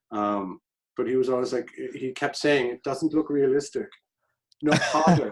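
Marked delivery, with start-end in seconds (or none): 2.6-5.3 put-on German accent, higher pitched. Retelling what the director kept saying on set: German accent imitating Ulf. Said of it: "you're great with accents".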